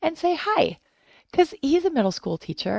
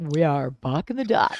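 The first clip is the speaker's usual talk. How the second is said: much lower radio announcer voice; 7 semitones lower than usual. Practicing the duo's show name, in a radio announcer voice. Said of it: "a better radio voice".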